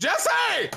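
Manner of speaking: high, loud calling-out voice.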